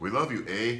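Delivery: put-on Canadian accent. Answering a request to say "we love you" in canadian: mock canadian accent. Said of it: "how do you say "we love you, Bunny" in Canadian?".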